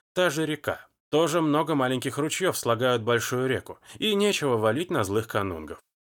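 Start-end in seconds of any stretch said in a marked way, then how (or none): none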